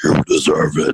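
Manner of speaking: put-on heavy-breathing voice. Answering why people should take care of themselves: Darth Vader voice with breathing. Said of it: "I can't do Darth Vader".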